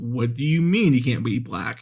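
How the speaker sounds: ordinary talk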